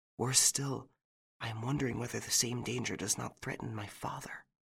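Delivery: voice dropped very soft, quiet and hushed. She finishes her sentence to her listener in a lower voice. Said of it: "she finished her sentence in a lower voice".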